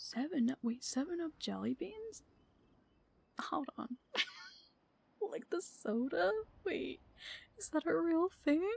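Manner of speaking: high voice, laughing through the words. Reacting with surprise to seven Up jelly beans: voice getting higher from laughing. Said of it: "My voice is getting higher every time I laugh".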